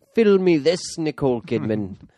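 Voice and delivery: terrible put-on Irish accent. You are acting out Tom Cruise's part in a film, in his horrible Irish accent. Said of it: "in his horrible accent said".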